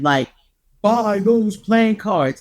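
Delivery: booming voice from overhead. Retelling hearing a voice over their head while standing in line: big booming voice. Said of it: "I heard this big booming voice like over my head".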